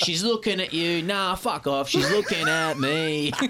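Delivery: laughing mock Australian accent, pitched high.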